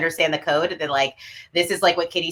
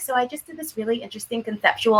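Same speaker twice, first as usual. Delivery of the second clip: mock modest tone, higher; 6 semitones higher than usual. Imitating the other speaker describing their own work: imitating a modest friend. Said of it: "modest with it".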